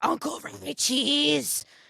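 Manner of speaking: put-on screaming little-kid voice, high with a rough edge. Retelling how a child called for an uncle all weekend: imitating a child screaming. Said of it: "in her screaming voice".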